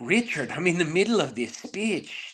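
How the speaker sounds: put-on cartoon villain voice. Sharing a fun fact about themself, speaker does a Dr. Charles Nichols impression. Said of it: "I do a great impression of the villain from The Fugitive".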